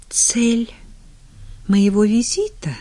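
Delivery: faint and hushed. Whitney, struggling to breathe, repeats the question back: barely audible. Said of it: "еле слышно переспросила она".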